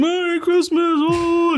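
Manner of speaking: put-on very high, cheery, jolly, festive voice. Greeting acts as they pass by to go on stage, doing a special voice. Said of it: "do the voice and all that stuff".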